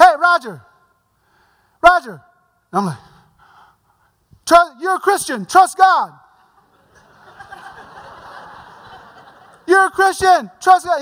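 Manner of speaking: put-on yelling. Retelling how a teammate yelled down at him in pain: imitating someone yelling. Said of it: "He's yelling at me like I can't hear him".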